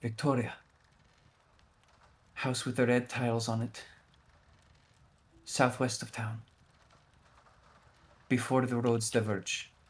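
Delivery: whispered voice. Voicing a character who stops on the way out to tell a player: whispering. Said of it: "stops and just whispers to you".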